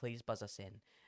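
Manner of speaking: put-on panicked voice. Retelling begging a stranger on the intercom to buzz them in: retelling a panicked plea. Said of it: "I just panic".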